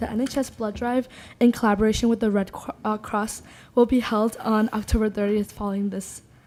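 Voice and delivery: puffing through the words, out of breath. Student board rep giving the report after running from the parking lot, out of breath. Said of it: "I'm like out of breath because I like ran".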